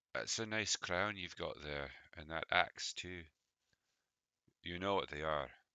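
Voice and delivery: quiet, hushed, private aside voice. Game master voicing Iron Hand leaning over to the player: hushed private voice. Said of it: "in a voice that only you can hear".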